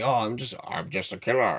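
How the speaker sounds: low, soft, pompous, boastful voice.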